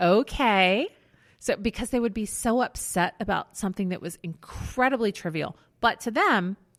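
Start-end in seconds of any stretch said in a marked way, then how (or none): 0.0-0.9 gentle, soothing kindergarten-teacher voice. Recalling talking to callers upset over trivial things: kindergarten teacher voice. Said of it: "I would put on my kindergarten teacher voice".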